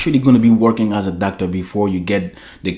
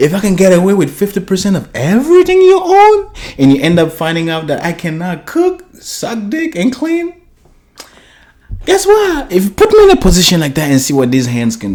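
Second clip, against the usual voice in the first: mocking put-on female voice, higher; 10 semitones higher, 4 dB louder than usual. Mocking a woman who talks up marriage, imitating her mockingly. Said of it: "You know how you sound like?".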